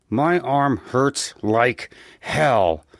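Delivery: through gritted teeth. A man who has just entered the apartment answers a woman, through gritted teeth. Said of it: "he said through gritted teeth".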